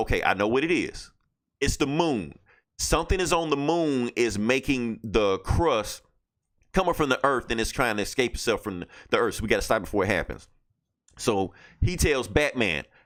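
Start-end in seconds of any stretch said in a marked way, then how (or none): none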